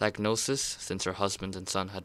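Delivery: ordinary delivery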